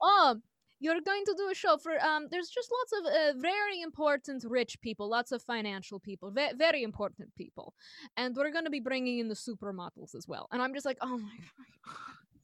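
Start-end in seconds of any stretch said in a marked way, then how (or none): 0.0-10.5 horrible, bad, put-on Russian accent. Retelling what the russian maitre d' told her about the show, horrible russian accent. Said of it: "apologies for my horrible Russian accent".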